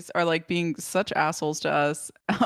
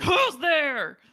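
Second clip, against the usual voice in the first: high-pitched aggressive cop voice; 9 semitones higher, 3 dB louder than usual. Retelling cops shining flashlights at a man asleep in a hammock, imitating aggressive cops. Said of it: "that was like really aggressive".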